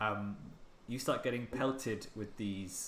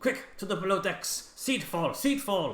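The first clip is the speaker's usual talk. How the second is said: very high, loud, alarmed shout; 10 semitones higher, 9 dB louder than usual. A game master voicing the captain ordering everyone below deck: shouting a warning. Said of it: "he's shouting".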